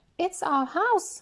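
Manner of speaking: little, high, squeaky mouse voice. Reading a story aloud as the Mother Mouse answers George: squeaky mouse voice. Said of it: "squeaked the Mother Mouse".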